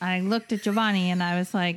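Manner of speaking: normal talking voice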